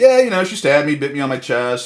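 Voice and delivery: put-on deadpan, matter-of-fact male voice, unbothered. Mocking a man on trial for sounding too calm: imitating a deadpan, matter-of-fact man. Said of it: "he's just, like, matter of fact".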